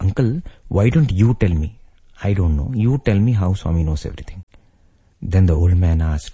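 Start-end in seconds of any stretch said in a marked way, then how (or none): none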